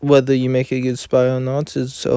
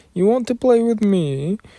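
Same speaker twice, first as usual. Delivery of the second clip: high put-on woman's voice, pitched up; 9 semitones higher than usual. Imitating Lady Milim by saying her playful line: imitating Lady Milim. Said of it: "I ended up having to imitate Lady Malim".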